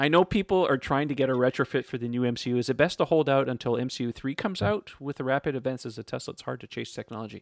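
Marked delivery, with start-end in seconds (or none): none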